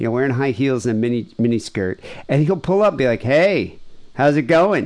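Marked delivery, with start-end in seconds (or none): 3.2-4.9 put-on Michigan man's accent, slower pace. Describing a YouTuber pulling up to a woman at night, quoting him in a Michigan accent. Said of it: "Just this Michigan guy voice, this Michigan accent".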